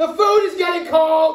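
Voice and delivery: high scream at the top of the lungs. Speaker retelling how his mother calls at dinnertime, imitating mother screaming. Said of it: "my mother screaming at the top of her lungs".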